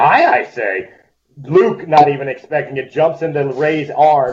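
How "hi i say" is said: playful, prankish delivery. Telling an imagined scene where Yoda plays a joke: Yoda voice. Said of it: "Yoda decides to play a joke".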